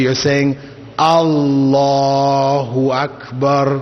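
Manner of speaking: very slow, drawn out. Teaching pronunciation, demonstrating a phrase said very slow, elongated. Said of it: "if you say it very slowly".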